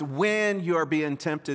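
WHEN stressed and said slowly. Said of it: "It should be italicized".

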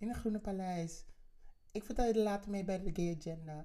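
high-pitched voice.

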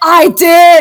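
screamed out high and loud.

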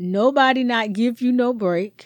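put-on Jamaican patois. Coaching the other speaker's delivery, showing the line in Jamaican patois. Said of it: "I wanted you to put a little more patois on it".

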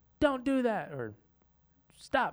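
put-on very high scolding shout. Arguing about yelling, the speaker shows how she yells at the dogs, retelling a yell. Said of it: "I will yell at the dogs".

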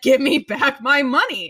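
insistent, demanding put-on child voice, shouting. Retelling how Michael grabs for his money back: imitating Michael shouting. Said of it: "shouting and trying to grab his money back".

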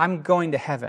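ordinary talk

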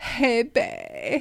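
off-putting, weird, icky delivery. Retelling how a guy she dated greeted her: imitating someone saying it weird and icky. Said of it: "he would say it all weird and icky".

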